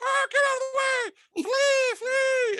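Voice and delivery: tiny, very high, very slow, drawn-out bug voice. Narrator voices cockroaches fleeing as the player rolls toward them: tiny cockroach voice. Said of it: "they're saying in their tiny cockroach voices like".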